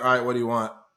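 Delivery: mock rude waiter voice. Describing a restaurant where servers are rude on purpose: imitating a rude server. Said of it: "they're just fucking rude to you".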